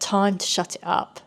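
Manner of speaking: ordinary delivery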